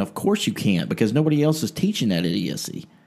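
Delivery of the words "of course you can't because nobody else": usual speaking voice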